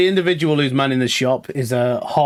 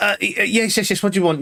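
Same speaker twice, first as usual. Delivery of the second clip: rushed, high, half-attentive barmaid voice; 7 semitones higher than usual. Speaker acts out the woman at the bar answering him, imitating a rushed, half-attentive woman. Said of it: "You can tell she's like really rushed around".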